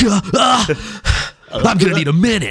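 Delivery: mock very slow, high, drawn-out gasping anime voice. Imitating a fighter who just got hit: gasping like an anime character. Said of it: "he's gasping like an anime character".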